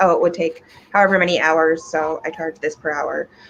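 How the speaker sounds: plain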